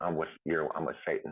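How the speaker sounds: ordinary delivery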